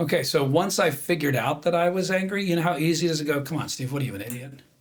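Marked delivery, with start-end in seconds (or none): 3.4-4.5 quick, hushed, harsh self-critical tone. Speaker acts out scolding himself for feeling angry, mock harsh self-judgment. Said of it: "Do you hear the judgment in that?".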